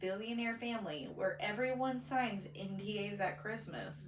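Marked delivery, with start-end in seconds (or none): none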